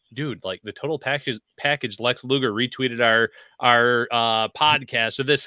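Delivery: ordinary delivery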